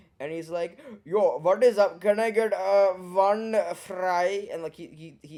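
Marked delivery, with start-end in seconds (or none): 1.0-4.5 huge, exaggerated put-on Indian accent, very slow, drawn out. Retelling dad at a McDonald's window with his sons: huge put-on Indian accent. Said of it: "my dad just pulls on a huge Indian accent".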